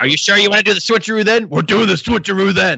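loud, gravelly wrestler voice. Imitating the wrestlers Demolition strategizing, in a Demolition gravelly voice. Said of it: "they would talk in their, you know, gravelly voices".

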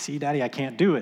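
frustrated, complaining tone. Retelling Madeline failing to hit the ball: imitating frustrated speech. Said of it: "seeing the frustration build up in her".

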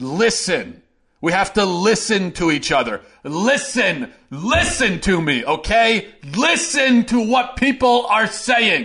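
optimistic yelling. Addressing listeners: optimistically yelling. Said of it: "Sorry, I'm yelling".

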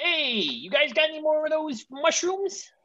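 very high-pitched, squeaky, really bad put-on voice. Joking about who should play Mario, a speaker does a bad Steve Buscemi impression. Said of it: "That's a really bad Steve Buscemi".

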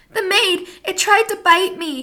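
shrill, high, loud screaming shriek. Sam, a little girl, faces her father, Dr. Parker: screaming. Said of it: "the little girl screamed into his face".

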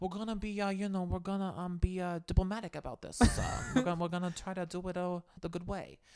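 quiet mock Italian accent. Praising Dolores from a reality show, voicing her approach: Dolores Italian mob-boss impression. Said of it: "Was a much better Italian accent".

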